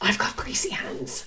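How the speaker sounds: whispered grumbling mutter under the breath. Retelling a friend wiping her hands at a party: imitating Catherine muttering under her breath. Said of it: "muttered under her breath".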